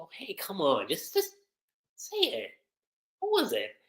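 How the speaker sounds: curious, cutesy, sing-song, swooping high. Retelling an anime scene where Juvia asks Grace again: imitating Juvia's curious, cutesy manner. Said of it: "curious, cutesy manner where she's like".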